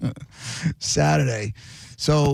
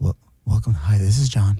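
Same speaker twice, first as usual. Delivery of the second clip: gentle, soft tone, voice slightly raised; 5 semitones lower, 5 dB louder than usual. Greeting colleagues on a call, showing off a soft-spoken monday voice. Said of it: "This is my soft-spoken Monday voice".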